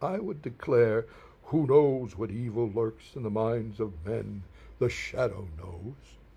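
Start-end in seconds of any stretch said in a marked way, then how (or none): 1.5-6.0 deep baritone with a theatrical flourish. A speaker recalls declaring a radio show's opening lines as a small child: deep baritone Shadow voice. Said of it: "imitating a deep baritone voice".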